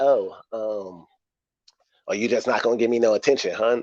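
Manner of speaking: speaking in a woman's voice. Acting out someone demanding attention once they get comfortable, imitating a woman's voice. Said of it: "excuse my woman voice".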